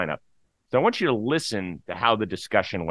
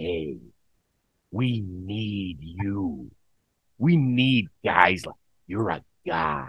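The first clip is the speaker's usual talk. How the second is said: upbeat, high-energy, energetic team manager voice. Imagining the conversation with the club's manager, the speaker does an impression of him. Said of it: "That's pretty good impression right there".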